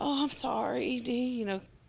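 put-on groggy, sleepy mumble. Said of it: "all kind of groggy and low".

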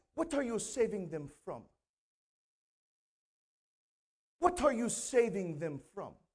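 put-on English accent from Britain. Retell a woman asking Pastor Harry to explain himself, in her British English accent. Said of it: "in her like British English accent".

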